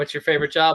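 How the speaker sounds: ordinary talk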